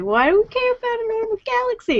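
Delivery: very high-pitched, disbelieving, incredulous tone. Speaker imitates the host's reaction to the topic, mock-incredulous. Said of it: "a little bit of incredulity in your voice".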